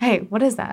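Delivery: put-on, not very friendly tone. Retelling a stranger's question at Whole Foods: imitating a not super friendly tone. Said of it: "That's how he sounded".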